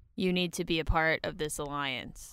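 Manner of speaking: low, totally flat monotone, no inflection. On a podcast, you are asked if Angela is there; answer with a monotone Angela impression. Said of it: "She's so monotone the whole time".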